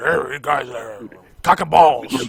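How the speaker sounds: put-on slow, loud, gruff voice.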